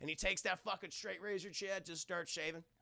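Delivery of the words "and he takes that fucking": usual speaking voice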